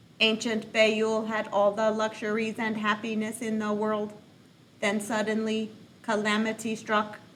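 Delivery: flat, mechanical robot reading voice in monotone. Reading a book passage aloud as a game for viewers: robot voice. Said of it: "I'm going to read like a robot".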